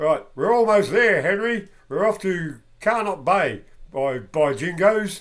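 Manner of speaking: real, strong Australian accent, loud and high. Asked to say the quote part again, reading the character's line in a real Aussie accent. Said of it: "say that again with a real Aussie accent".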